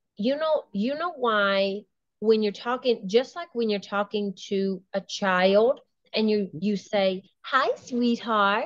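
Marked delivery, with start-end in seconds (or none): 7.4-8.7 lightened, sweet, lighter voice. Showing how people talk to a child, lightened voice. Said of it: "you lighten your voice".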